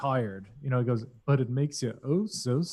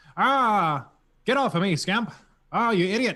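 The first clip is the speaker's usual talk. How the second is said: put-on high, old-style mid-Atlantic accent; 7 semitones higher, 4 dB louder than usual. Describing how every stormtrooper sounds, the speaker does a mid-Atlantic accent. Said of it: "somewhat of a mid-Atlantic type of like uh, cadence".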